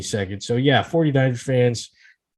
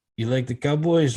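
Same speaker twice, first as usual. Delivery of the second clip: imitated Spanish-accented voice. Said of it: "so I get to do the accent".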